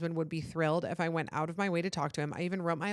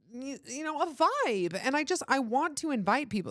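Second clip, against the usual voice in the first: high, whiny, pleading tone; 8 semitones higher than usual. Talking about inviting guests to a themed party, whiny. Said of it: "That sounded so whiny".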